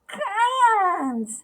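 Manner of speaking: very high, drawn-out, pinched-nose nasal cry. Narrating a character who exclaims while holding her nose: nasal voice. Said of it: "she exclaimed in a nasal voice".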